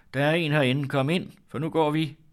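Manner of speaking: loud, high-pitched calling out. She calls toward the kitchen door to her mother, calling out loudly. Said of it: "råbte hun højt mod køkkendøren".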